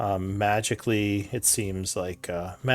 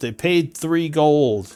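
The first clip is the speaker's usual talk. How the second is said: shouting upward, higher in pitch and louder; 6 semitones higher, 7 dB louder than usual. Voicing a guard who calls up to the group: guard yelling up. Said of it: "And the guard would yell up".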